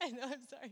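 crying while talking. Telling listeners about a friend who passed away in December, crying while talking. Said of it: "I'm crying in front of everyone".

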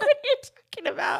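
laughing, incredulous, high.

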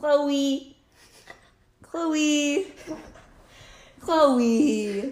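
annoying, complaining, high, loud whiny voice. Saying chloe's name just to annoy, annoying complainy voice on chloe. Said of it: "in an annoying voice. Like a complainy voice".

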